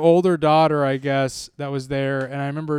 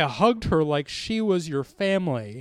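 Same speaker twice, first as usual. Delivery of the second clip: ordinary talk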